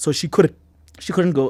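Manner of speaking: choked-up voice catching and breaking with emotion. Telling why the daughter could not visit her brother: choked up. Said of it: "I'm getting choked up".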